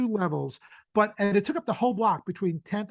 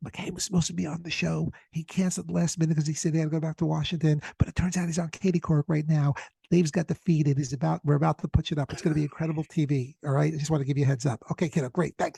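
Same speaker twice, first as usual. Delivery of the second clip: put-on whisper, lower pitch; 4 semitones lower than usual. Retelling a phone call made while hiding under a deck, retelling a whispered call. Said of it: "and I'm whispering".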